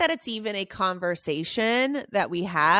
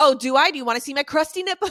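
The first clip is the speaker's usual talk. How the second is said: raised, pitched-up half-yell; 6 semitones higher, 5 dB louder than usual. Retelling a reply to a pediatrician who said keep trying: imitating own past yelling. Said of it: "I kinda yelled at him".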